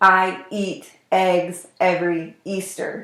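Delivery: very slow, abrupt, hard glottal attacks on vowels. Showing how starting voicing too hard causes nodules: hard abrupt vowel onsets. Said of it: "do you hear how kind of abrupt and hard that sounds?".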